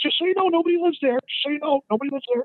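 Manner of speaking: very high, squeaky put-on man's voice. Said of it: "He says".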